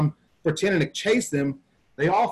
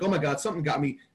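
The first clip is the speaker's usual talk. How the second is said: put-on panting, quieter; 5 dB quieter than usual. Retelling bursting back in after a fake attack: imitating breathing hard. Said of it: "I'm breathing hard".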